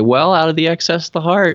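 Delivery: mock dry sarcasm. Speaker recounting what they sometimes say back to people, retelling a sarcastic reply. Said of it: "I get real, like, sarcastic and I say".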